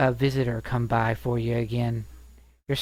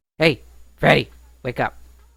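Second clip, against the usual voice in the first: loud, gruff voice, just short of beastly; 2 semitones higher, 7 dB louder than usual. A storyteller voices a stranger calling through the bars, gruff voice. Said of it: "you hear this sort of gruff, uh, not quite Loxodon gruff voice, but still gruff voice".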